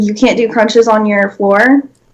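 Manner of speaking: put-on sassy delivery dripping with attitude. Acting out a retort to people who skip the gym: imitating someone with sass. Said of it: "You said that with such sass".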